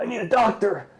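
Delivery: very high, all messed-up, busted-up cry. Voicing a beaten-up character who asks for a doctor: acting all messed up. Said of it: "He's like, all fucked up".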